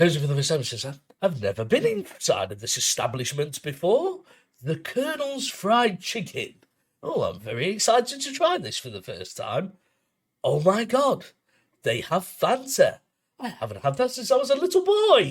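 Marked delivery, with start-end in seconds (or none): 1.2-15.3 gentle, very soft-spoken put-on voice, swooping. Acting out a man talking at the reception in KFC, imitating a very soft voice. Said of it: "he's got a very soft voice".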